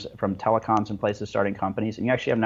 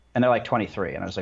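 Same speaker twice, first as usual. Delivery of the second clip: normal talking voice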